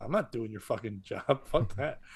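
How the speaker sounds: low whisper right under the breath. Retelling walking up to the host and telling him off, whispered. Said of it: "I just whisper that to him".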